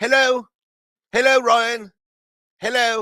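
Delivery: weak, feeble put-on British accent, very high pitch. Giving a shout-out to a listener across the pond in a weak british accent. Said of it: "that's about all I got in terms of a a, a, a British accent".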